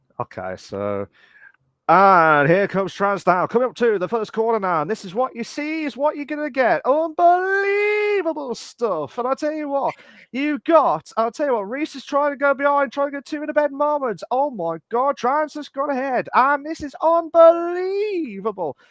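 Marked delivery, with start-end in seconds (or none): 1.9-18.7 high-pitched racing commentator patter. Performing racing commentary on request, as if calling a race: racing commentator voice. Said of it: "your commentator voice".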